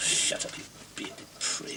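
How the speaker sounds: soft, breathless muttering under the breath.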